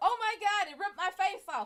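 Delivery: high, loud, mock panicked scream.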